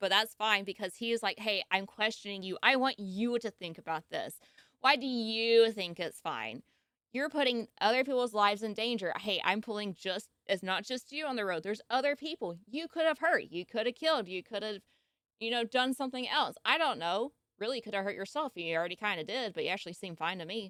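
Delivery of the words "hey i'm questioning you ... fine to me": normal talking voice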